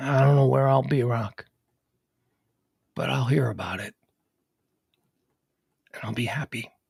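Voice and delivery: weak, low, fading dying man's voice. Speaking to Rock from a deathbed, as George Gipp dying in bed. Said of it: "in the of a man dying in bed".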